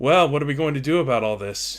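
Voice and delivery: woman's character voice. Voicing a woman speaking from the back of the room: Madame Greyberry voice. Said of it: "you hear a f-, female voice say".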